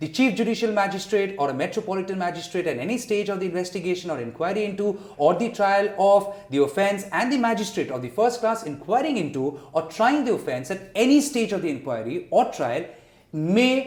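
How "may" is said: heavy emphasis on the word may. Reading out a legal provision on pardons, stressing the word may. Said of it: "I stress on the word may".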